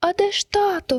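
thin, very high, slow squeaky voice. Narrator reads a baby bird asking its mother where father is, squeaking. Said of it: "запищав Пік".

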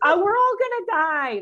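comic, mock doom-laden delivery.

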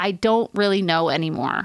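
plain

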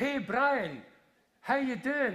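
very high, loud, drawn-out acted shout. Retelling how a young guy at the end of the queue shouted to you. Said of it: "he shouted in a really loud voice".

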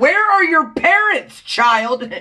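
exasperated, very high, slow, exaggerated, stretched-out delivery.

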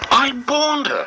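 fuming outburst, very high pitched and loud. Toby, hearing the news about Mavis being stuck, speaks; fuming. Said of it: "he fumed".

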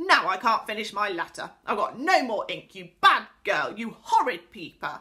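in a rage. Narrator reads an angry pixie scolding a girl who peeped, in a rage. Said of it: "still in a rage".

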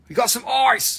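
bad, high-pitched fake Australian accent. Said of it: "my Australian accent's really bad".

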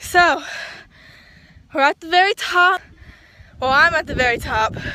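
out of breath, winded, catching breath. Just reached the very top of a climb, telling viewers, out of breath. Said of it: "I'm out of breath".

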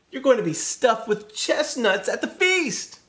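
very high-pitched, loud, alarmed cry. After seeing the cookbook, calling out to the turkey; crying out. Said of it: "cried Beauty".

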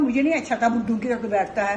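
plain

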